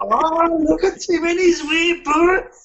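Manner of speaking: ogre voice, pitched very high. Bantering with the other speaker, Shrek voice. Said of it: "Why did I sound like Shrek then?".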